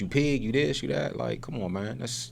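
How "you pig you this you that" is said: mock angry outburst, higher and quieter. Describing how the mother spoke to the police, imitating the mother berating cops. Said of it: "Look how her mother coming to, to the cops".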